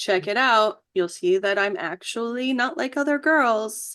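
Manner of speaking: ordinary talk, nothing marked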